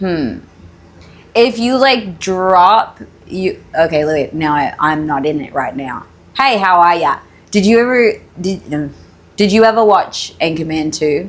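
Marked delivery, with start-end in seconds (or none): 6.4-11.3 full, straight-up Australian accent. Trying out the accent for the other speaker, in an Australian accent. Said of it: "you can do like a straight up Australian accent".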